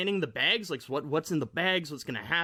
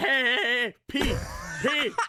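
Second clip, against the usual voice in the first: high-pitched, drawn-out hollering yell; 7 semitones higher, 4 dB louder than usual. Asked what he would have yelled from his balcony, he demonstrates with pretend yelling. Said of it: "I would have yelled".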